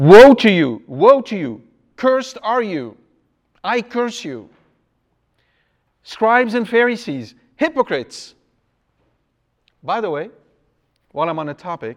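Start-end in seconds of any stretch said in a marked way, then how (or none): 0.0-8.3 fierce, fiery, furious, loud, high-pitched delivery. A priest acts out a curse on scribes and Pharisees, mock-angry cursing. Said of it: "This is not something you can say with a quiet and gentle British tone".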